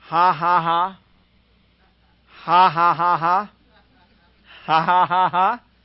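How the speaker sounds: loud, very slow, taunting put-on ha-ha-ha laugh. Retelling how a preacher laughed at the devil: imitating his famous laugh. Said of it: "And he goes on with his famous laugh".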